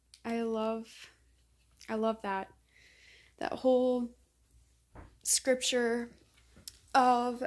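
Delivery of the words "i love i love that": choked up, holding back tears. Reacting to a scripture passage just read aloud, holding back tears. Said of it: "I'm trying not to cry".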